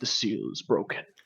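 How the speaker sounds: hushed, low, deep-voiced, breathy whisper. Storyteller voices the character Chimo during the game, Chimo in a very deep voice. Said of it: "he says in a very deep voice".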